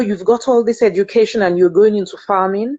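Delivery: ordinary delivery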